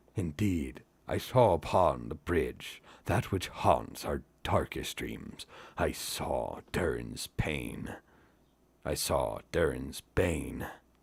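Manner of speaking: low, hushed voice heavy with dread. Reading aloud, the narrator voices Gimli answering Celeborn: Gimli, low and full of dread. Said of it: "said Gimli in a low voice, and dread was in his eyes".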